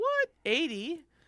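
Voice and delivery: high-pitched voice. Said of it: "That's why my voice went so high".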